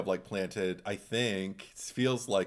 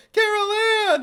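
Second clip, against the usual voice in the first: put-on repeated full-on shout, higher and louder; 12 dB louder than usual. Imitating a repeated call of a name: Laura Flynn Boyle impression.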